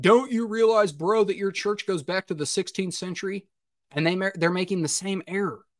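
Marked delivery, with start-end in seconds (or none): 0.0-3.5 put-on scoffing, mocking, taunting tone. The speaker voices what critics ask him about his church, mimicking a mocking question. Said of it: "They'll mockingly ask me".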